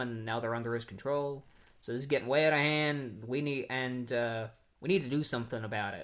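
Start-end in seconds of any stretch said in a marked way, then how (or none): none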